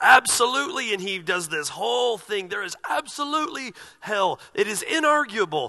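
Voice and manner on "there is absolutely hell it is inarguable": big, bold, fiery, thundering certainty. Retelling how James McDonald declared that hell is real: James McDonald's fiery, thunderous delivery. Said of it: "fiery, thunderous, bold".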